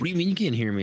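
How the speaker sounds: play-acted irritated, pissed-off, annoyed tone. Parent retelling their son's reaction when they can't hear him, imitating angry son. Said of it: "he gets all pissed off".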